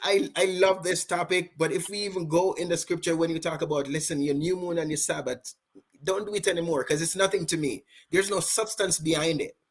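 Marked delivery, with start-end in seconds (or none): none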